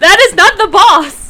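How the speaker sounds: shouting, high pitched. Telling the others the fight was not the boss battle: shouting. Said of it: "I was shouting at Kaido".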